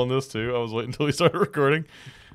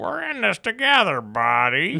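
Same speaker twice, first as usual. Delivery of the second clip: slow, slightly higher-pitched, encouraging voice; 7 semitones higher than usual. Retelling how the alien sounds now: imitating Four Arms' newer voice. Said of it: "his voice sounds more forearmy in this".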